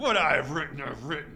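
loud, ground out between clenched teeth. Reading the grumpy Pilate's answer in the Bible story, Pilate through his teeth. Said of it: "that was through his teeth, just like that".

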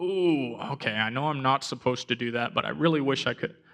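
ordinary talk

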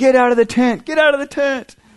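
acted shrill, very high scream. Retelling how an uncle screamed a warning from the cabin: imitating someone screaming. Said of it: "my uncle screaming".

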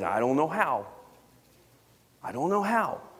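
put-on small toddler voice, helpless sounding. A parent retells a young child's reply when asked to say the family prayer, toddler voice. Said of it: "he says in his toddler voice".

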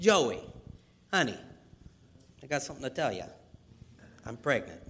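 heavy, laid-on put-on Brooklyn Italian accent. Imagining Mary sitting down with her fiance Joseph; Mary in Brooklyn Italian accent. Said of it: "she's going to sound like an Italian from Brooklyn".

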